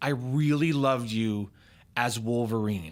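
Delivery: proud, earnest tone. Retelling a boy standing up to speak to the actor, imitating a loud proud declaration. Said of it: "he very loudly, very proudly says".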